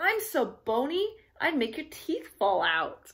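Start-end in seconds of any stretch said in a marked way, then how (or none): none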